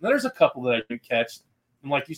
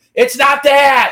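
slow, high, loud scream. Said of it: "I'm screaming at my phone".

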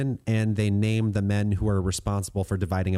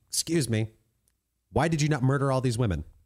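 put-on angry voice, much higher; 5 semitones higher than usual. Retelling the Bible story, the speaker acts out Moses getting super mad. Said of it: "gets super mad".

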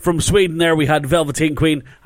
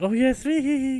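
mimicked giddy gushing, higher and quieter; 9 semitones higher, 7 dB quieter than usual. Mimicking a co-host talking to a band she likes: imitating her giddy voice. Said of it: "She's like".

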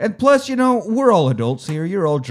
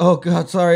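mortified, ashamed, embarrassed, sorry blurt; 3 semitones higher than usual. Acting out what she probably says after her loud fart: imitating someone mortified. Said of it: "mortified that she just ripped a loud one".

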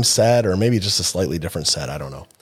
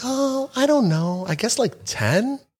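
very high-pitched, matter-of-fact put-on voice. Retelling a woman's funny answer to your question, imitating her high-pitched voice. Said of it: "in her high pitched voice".

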